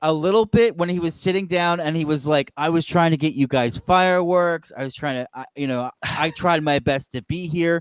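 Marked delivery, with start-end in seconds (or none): 2.6-7.8 dry, sarcastic, falsely earnest, acted-out tone. Retelling a contract signing, imitating John Cena being sarcastic. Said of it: "That was a little bit more sarcastic".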